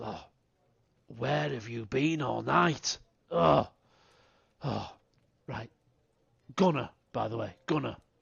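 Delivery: put-on loud, rough, in-your-face drunk voice. Voicing a drunk Gunnar who puts his arm around a player: drunk character voice. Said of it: "have had a, um, at least one too many".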